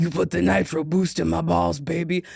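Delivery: very deep, very slow delivery. Joking with an audience, doing a line in a Vin Diesel voice. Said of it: "Vin Diesel voice".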